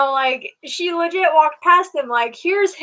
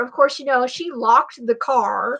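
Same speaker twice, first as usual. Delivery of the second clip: plain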